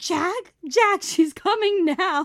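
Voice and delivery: shrill, high, very loud, all-out shriek. Feeling the baby coming, the speaker retells screaming to the husband. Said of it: "And I'm like screaming".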